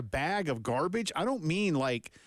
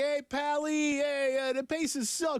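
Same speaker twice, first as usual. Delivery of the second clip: mock yelling, higher pitch; 10 semitones higher than usual. Acting out a fan taunting across the streets of Manhattan: imitating a fan yelling. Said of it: "yell across the streets of Manhattan".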